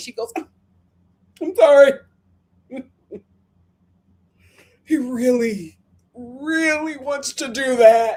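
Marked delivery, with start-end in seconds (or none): 1.4-8.2 slow, tearful speech, put-on crying. Recounting a scene, the speaker quotes Ashley: imitating Ashley crying. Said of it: "she starts crying".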